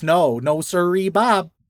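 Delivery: put-on slow, drawn-out Midwestern accent, Wisconsin style. Voicing a talking sword who refuses someone: Midwestern accent. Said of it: "It sounds like a Midwesterner?".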